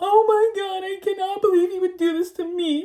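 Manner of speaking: put-on very high, tearful, panicked crying. Recounting arriving at his house and freaking out, retelling panicked crying. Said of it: "I am literally like crying".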